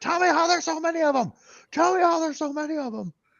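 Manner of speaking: put-on shrieked, repeated screaming, pitched right up. Retelling someone screaming a demand at another person: imitating someone screaming. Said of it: "screaming at him".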